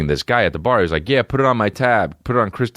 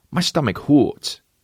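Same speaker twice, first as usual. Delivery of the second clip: put-on high, babyish baby-talk voice; 7 semitones higher than usual. Speaker retells what he says to his girl; baby voice. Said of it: "You don't do baby voice with your girl".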